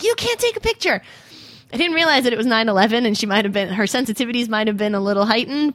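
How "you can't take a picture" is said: acted, shrill, very high yelling. Retelling how the train conductor started yelling at the speaker, retelling a yell. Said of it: "starts yelling at me like".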